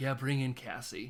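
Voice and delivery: normal talking voice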